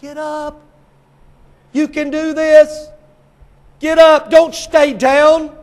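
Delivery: high, loud, urgent yell. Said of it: "you know what he's saying".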